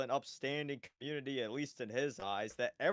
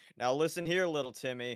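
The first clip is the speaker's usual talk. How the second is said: ordinary talk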